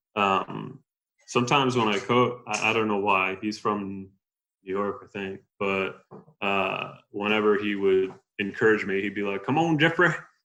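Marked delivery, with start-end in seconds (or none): 9.5-10.1 put-on raised, pitched-up, encouraging Southern accent. Retelling how the cross country coach encouraged him: imitating Jim Brunswick's Southern accent. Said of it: "use, like, a Southern accent almost".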